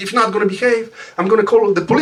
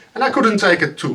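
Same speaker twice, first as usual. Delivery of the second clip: ordinary delivery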